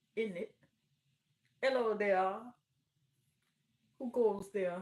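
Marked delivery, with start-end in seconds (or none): 1.6-4.8 very loud, regal announcing voice. Mocking overly formal speech by imitating the Queen of England voice. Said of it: "speak like the Queen of England".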